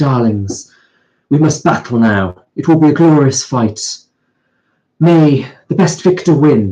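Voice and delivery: put-on very posh accent with a poetic lilt. Recounting a warrior character who called the players darlings, in a posh accent. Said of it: "she spoke in a very sort of posh accent".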